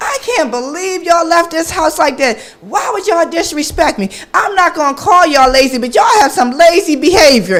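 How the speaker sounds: raging, furious, high yell. Retelling a moment of rage at the kids: imitating herself screaming angrily. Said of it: "I'm downstairs screaming".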